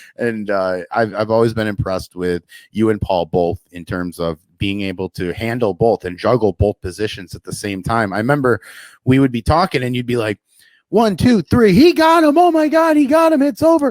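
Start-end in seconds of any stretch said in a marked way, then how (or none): 10.9-13.9 mock very high, loud, breathless, excited voice. Retelling a co-commentator's match call: imitating a breathless excited call. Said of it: "You didn't even take a breath".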